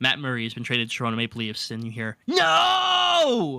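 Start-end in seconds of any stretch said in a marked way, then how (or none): 2.3-3.6 very high, raspy, stretched-out screamed no. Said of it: "literally screamed".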